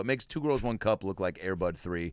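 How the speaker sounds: plain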